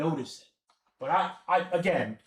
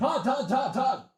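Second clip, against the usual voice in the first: pitched-up TV sports analyst announcer voice; 7 semitones higher than usual. Calling out names one after another, doing a Mel Kiper impression. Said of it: "That's my Mel Kiper impression".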